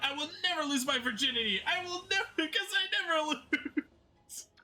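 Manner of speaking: very high, declaiming character voice. Retelling a line read in the Takumi voice actor voice. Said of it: "the Takumi voice actor voice".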